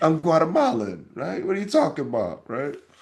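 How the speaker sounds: put-on Italian accent, pitched high. Retelling how people replied to being called Puerto Rican, imitating them with an Italian accent. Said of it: "I love how I make them sound Italian".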